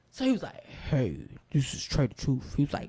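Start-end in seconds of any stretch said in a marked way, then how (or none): 0.6-2.5 put-on, very distinct, low, deep man's voice. Retelling a phone call about winning a car, imitating the caller's really deep voice. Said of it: "have this really deep voice".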